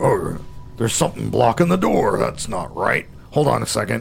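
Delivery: gruff character voice, rough and creaky. Narrator voicing an unseen character for the group, in a gruff voice. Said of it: "you hear a gruff-sounding voice say".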